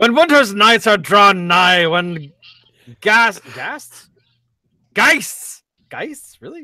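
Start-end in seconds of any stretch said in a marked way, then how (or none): 0.0-5.6 badly butchered, mangled Scottish accent. Reading lines aloud after being told to just be Scotty: Scotty voice, Scottish accent. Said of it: "I will butcher a Scottish accent".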